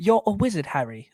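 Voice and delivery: put-on British accent with movie-line delivery. Taking turns at impressions, the speaker does a Harry Potter impression. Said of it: "I could do like a little Harry Potter".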